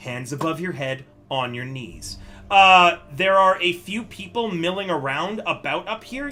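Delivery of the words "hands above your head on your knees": hushed, quiet, very low-pitched voice. Narrator voicing a woman with her gun drawn on both listeners, quiet voice. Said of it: "She says to both of you in a quiet voice".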